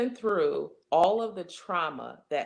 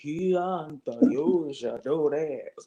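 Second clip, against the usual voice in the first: louder, slow spooky voice. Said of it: "spooky voice like".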